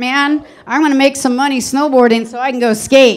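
ordinary talk

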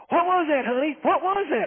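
high woman's voice. Retelling what a lady by the river called out: imitating a lady's voice. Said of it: "then we hear a lady's voice".

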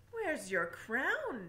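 stern, severe, no-nonsense tone. The king questions the princess once she is dressed: stern. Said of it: "Asked the king sternly".

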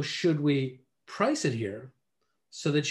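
"price it here" set off by short pauses. Demonstrating a listing pitch line: short pauses around 'price it here'. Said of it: "We're doing it with a little pause before and a little pause after".

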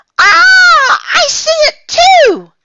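very high, loud, shrieking scream, "ah" drawn out. [name], in the dark hotel after a sudden 'boo!', screaming. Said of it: "screamed [name]".

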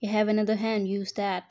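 ordinary talk

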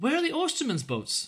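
very high, worried, anxious voice. Near the market house a woman stops a man with a wheelbarrow, asking anxiously. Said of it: "she asked anxiously".

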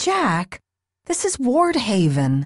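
exasperated, fed-up, flooded with exasperation. Narrating a novel, Kris answers Jack, exasperated. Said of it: "letting exasperation flood her voice".

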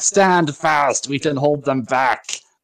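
mock, rousing yelled voice. Describing a scene, the speaker acts out a man yelling at a soldier: imitating someone yelling. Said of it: "he's yelling at the soldier like".

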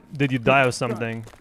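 normal talking voice

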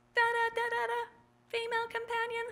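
otherworldly voice, pitched very high. Recalling phone calls in a booth, the speaker imitates the caller's strange alien voice. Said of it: "it would be the alien voice".

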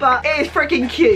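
ordinary talk, nothing marked

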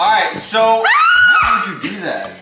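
high, loud angry outburst. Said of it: "Why are you getting mad".

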